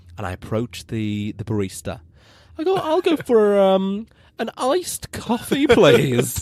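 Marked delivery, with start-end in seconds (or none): 2.8-6.5 high, slow, casual delivery. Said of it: "Picture the scene, hands on hips".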